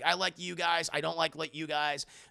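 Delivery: ordinary delivery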